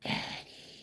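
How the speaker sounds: put-on small, eerie, creepy child's whisper. Imitating a little kid whispering right in your face, creepy little whisper on 'Daddy'. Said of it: "they do that little whisper like, ... like in that creepy little voice".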